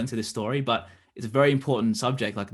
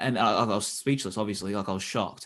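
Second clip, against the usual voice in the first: plain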